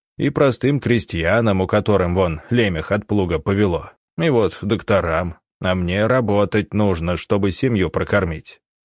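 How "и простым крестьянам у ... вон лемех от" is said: usual speaking voice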